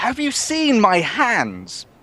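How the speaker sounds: very high, swooping, drawn-out holler. In character, calling out so the other guys can hear, shouting. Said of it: "I sort of shout".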